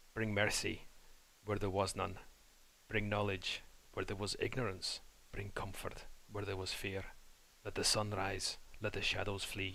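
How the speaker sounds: soft, hushed whispering. Saying a character's prayer outside while nobody's watching, whispering a prayer to himself. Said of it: "I'm going to whisper pretty much to myself".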